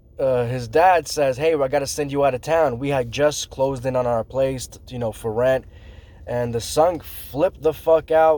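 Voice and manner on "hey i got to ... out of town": ordinary talk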